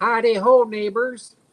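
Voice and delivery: cheery, bright, high tone. Rejecting a Kermit comparison, the speaker offers a greeting in a Ned Flanders voice. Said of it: "I'm more Ned Flanders than anybody else".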